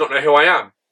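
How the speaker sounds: mock deadpan, dead serious flat tone. Retelling what a stranger at a meet and greet said: imitating a dead serious question. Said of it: "dead seriously looks me in the eyes and goes".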